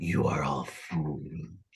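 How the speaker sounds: very low, soft, dragon-like rumbling voice. Game master voices a box speaking to the players, in a deep draconic voice. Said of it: "a deep, draconic voice".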